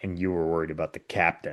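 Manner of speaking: put-on petulant, smart-alecky, soft snarky tone. Quoting Wesley after helping someone up: imitating Wesley being snarky. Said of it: "this snarky little".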